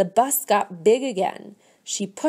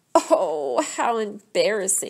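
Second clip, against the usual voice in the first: groaning delivery. Narrator reading a character's reaction when a seed lands in a man's hair, groaning. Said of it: "Phoebe groaned".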